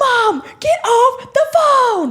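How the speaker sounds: play-acted, very high-pitched yelling. Retelling a Stranger Things scene where Mike yells at his mom, retelling Mike's yell. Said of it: "he's like yelling at her".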